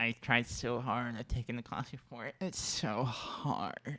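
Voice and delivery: exaggerated nasal voice, through the nose. Answering a question about their proudest moment: exaggerated nasal voice. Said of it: "you're really nailing the nasaliness now".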